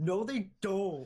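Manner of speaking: put-on angry little kid, high, loud screaming. Mocking how the other speaker said it: imitating an angry little kid scream. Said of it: "Just like the angry little kid scream".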